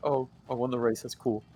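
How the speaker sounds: quiet put-on voice. Describing friends playing Mario Kart, quietly imitating friends. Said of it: "They're just like kind of quiet".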